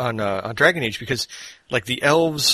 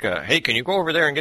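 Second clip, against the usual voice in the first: put-on Midwestern-accented dwarf voice, higher; 4 semitones higher than usual. Speaker imitates a dwarf in a game, Midwestern American accent. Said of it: "it's like Midwestern American".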